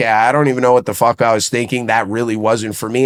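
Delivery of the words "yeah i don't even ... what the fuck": usual speaking voice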